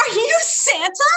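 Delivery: put-on high, weepy, tearful child voice. Retelling a tearful daughter's question at bedtime: imitating a crying child. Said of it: "she's got these tears coming down her face".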